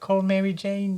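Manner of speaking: fake, shaky British accent, pitched way up. Recalling a character and quoting her: Ursula Ditkovich impression in British accent. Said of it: "so I just went to British".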